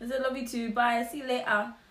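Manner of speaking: high delivery, words broken up by laughter. Recounting a breakup that was never named, laughing while speaking. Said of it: "Sorry, I'm laughing".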